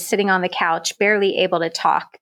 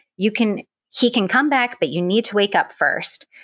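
irritated, angry, insistent voice; 3 semitones higher than usual. Retelling a recovery nurse urging the speaker to wake up: imitating an angry nurse. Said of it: "she was getting angry with me".

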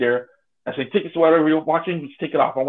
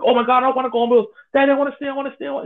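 put-on very high, pleading, begging little kid voice; 10 semitones higher than usual. Retelling how the listener's little brother begged their dad to stay, imitating a child begging. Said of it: "He was begging your dad".

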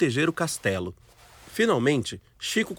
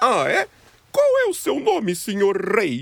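silly put-on storybook voice, high and sing-song; 5 semitones higher, 3 dB louder than usual. A child playing make-believe answers a playmate crowned caterpillar king, funny voice. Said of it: "fazendo uma voz engraçada".

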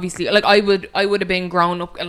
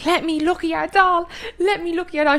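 very high, shrieking, pestering scream; 11 semitones higher than usual. Retelling a car ride as a child begging for a doll: imitating a child screaming. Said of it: "I was screaming the car down".

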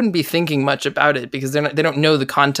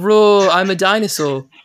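slow, put-on British accent by American speaker; 4 semitones higher, 4 dB louder than usual. Recalling the first line they learned to say in a british accent. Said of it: "the first thing I learned to say in a British accent".

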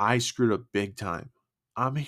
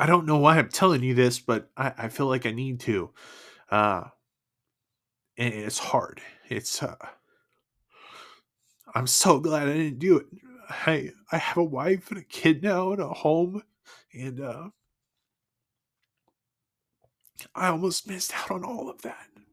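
crying, tearful voice, speaking through tears; 4 semitones higher than usual. Sharing a personal story with the listener; crying. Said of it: "I'm sorry, I'm crying".

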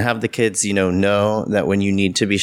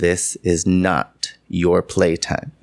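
very calm yet icy cold voice; 2 semitones lower than usual. Retelling what they told shocked kids after slamming books down, calm but cold. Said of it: "in a very calm but cold voice".

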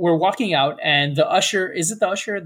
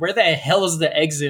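ordinary talk

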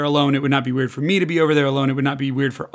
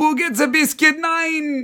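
put-on very high, goofy, weird German accent; 13 semitones higher than usual. Describing a goofy wiener dog character who overeats, in a weird German accent. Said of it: "weird German accent".

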